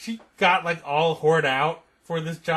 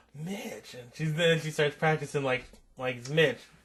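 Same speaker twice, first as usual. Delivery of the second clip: usual speaking voice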